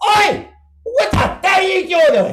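shrill, all-out, very high, very loud scream. Retelling a performer yelling from the stage at someone leaving: imitating someone screaming. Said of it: "screaming into the microphone".

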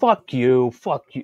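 acted South Philadelphia accent. Speaker imitating Ethan Van Sciver for a friend; Ethan Van Sciver South Philly impression. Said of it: "go all South Philly on you".

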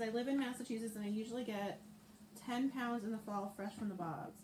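ordinary delivery

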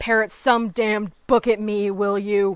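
loud, roared, angry snarling voice. Reading a story aloud, voicing a father speaking to his son, snarling. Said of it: "Lord Witten snarled, ... Within roared".

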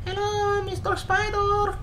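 put-on very high Eastern European little child voice. Repeating a co-player's line to a spider, in a little Eastern European child voice. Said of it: "Little Eastern European child".

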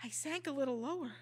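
plain

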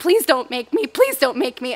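tearful, crying, pleading voice. Retelling being made to get into a box, the speaker re-enacts a crying plea. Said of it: "as I lower the top and start crying more".

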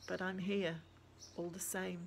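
plain

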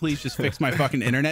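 ordinary talk, nothing marked

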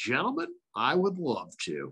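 sing-song sports announcer voice with swooping lilt. Retelling how he answered young guys inviting him on their show, use a Vin Scully voice. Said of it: "all of this Vin voice".

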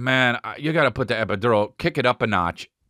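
ordinary delivery

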